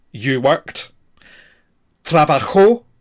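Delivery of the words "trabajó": trabajó with stress on the final -jó. Going through a spanish verb's forms in order: stress on final o of trabajó. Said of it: "with the stress on the O".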